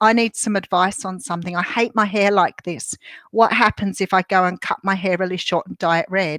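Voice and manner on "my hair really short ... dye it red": ordinary talk, nothing marked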